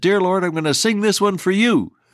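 put-on very high shout. Telling how a man called out his car window as he drove: retelling a shout. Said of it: "he shouted out the window and said".

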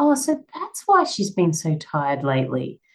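hushed, quiet, refined voice. Retelling her mum's little joke after a male friend's remark, in a quiet refined voice. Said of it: "really quietly in a really refined voice".

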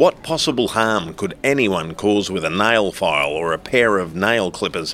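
plain

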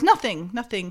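usual speaking voice

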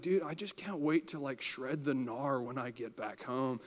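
hushed surfer dude voice. Recalling a guy from summer camp who always talked like this: surfer dude voice. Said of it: "he always talked like this".

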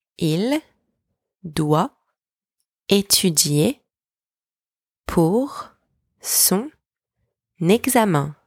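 each word said alone, long pause after each. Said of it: "Please repeat after me".

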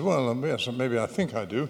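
plain

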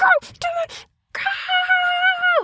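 very high, mock crying cheer, wailing.

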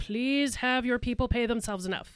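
ordinary talk

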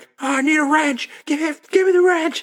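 very high, loud, full-on yell. Retelling the same movie scene, character asks for a wrench: imitating a character yelling.

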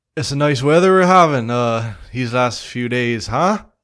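very loud, projected calling out. Game master voicing a character answering players shouting from outside, slightly raised voice. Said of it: "he kind of raises his voice a little bit".

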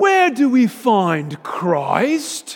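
put-on very thick British accent, high and swooping. Retelling how he asked his class a rhetorical question, in a thick British accent. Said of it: "in a very thick British accent".

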